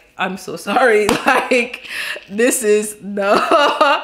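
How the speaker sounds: put-on, very slow, drawn out, cracking up laughing. Retelling what he said at the door, imitating him laughing while apologizing. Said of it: "he busts out laughing".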